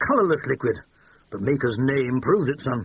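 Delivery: ordinary delivery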